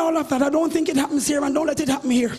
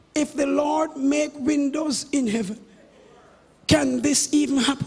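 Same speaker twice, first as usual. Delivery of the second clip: ordinary delivery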